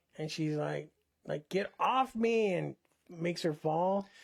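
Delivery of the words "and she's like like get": plain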